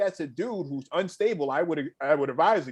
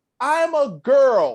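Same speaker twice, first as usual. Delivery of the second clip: very loud, shrill, angry voice; 8 semitones higher, 8 dB louder than usual. Retelling a woman's reply after being called sir, the speaker gives a mock-angry retort. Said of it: "like angrily".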